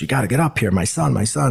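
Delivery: mock pleading cry, rough and distraught, like screaming. Retelling how his father yelled for the paramedics, imitating someone screaming. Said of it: "and he's screaming".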